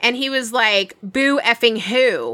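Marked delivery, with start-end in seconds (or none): 1.0-2.3 put-on, sneering, mocking, scornful tone. Retelling a coworker criticizing her for crying: imitating someone mocking. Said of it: "criticizing me for crying".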